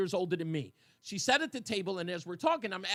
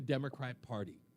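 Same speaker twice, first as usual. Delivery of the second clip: normal talking voice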